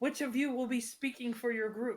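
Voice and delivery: calling out, projected to be heard. In a loud room, a goblin calls to the group, projecting through cupped hands. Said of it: "cups his hands to kind of like project his voice".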